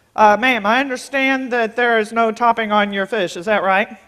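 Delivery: stiff, formal, very official by-the-book voice. Retelling how the manager came to the table: imitating a very official manager. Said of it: "He's very official".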